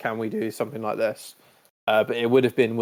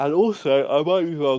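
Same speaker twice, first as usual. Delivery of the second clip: talking through a yawn; 4 semitones higher, 4 dB louder than usual. Speaker mid-discussion, yawning while talking. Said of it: "Sorry for yawning".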